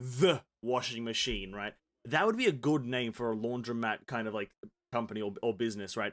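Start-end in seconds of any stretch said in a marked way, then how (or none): 0.0-1.5 heavy stress on the word "the". Suggesting a name for a laundromat business, with stressed the. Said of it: "you would have to emphasize the".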